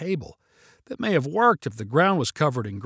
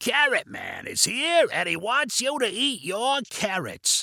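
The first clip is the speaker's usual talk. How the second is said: exaggerated, big raspy voice swooping up and down; 5 semitones higher than usual. Narrator reads an uncle playing Carrot Man for the kids, exaggerated raspy voice. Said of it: "exaggerated his raspy smoker's voice".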